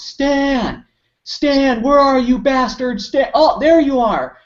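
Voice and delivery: mock high yell at full volume, one word drawn out. Recalling a movie line, the speaker imitates him yelling for stan. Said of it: "he started yelling at the top of his lungs".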